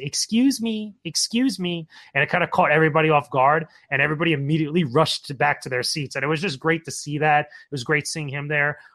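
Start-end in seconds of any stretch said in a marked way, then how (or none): 0.0-1.9 very cute, high, very slow voice. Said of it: "like a very cute voice goes".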